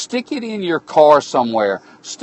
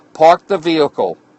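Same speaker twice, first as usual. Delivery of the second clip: usual speaking voice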